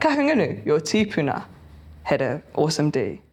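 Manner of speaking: put-on deadpan, straight-faced delivery. Acting out a line about stereotypes: put-on deadpan delivery. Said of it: "with such a straight face".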